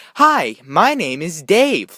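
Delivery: very slow, creepy, unsettling voice. Speaker retells a random guy greeting their dad, imitating Dave's creepy voice. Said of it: "in that voice, ... it was kind of creepy".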